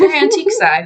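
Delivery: laughing out in a high pitch. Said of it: "that sounds funny".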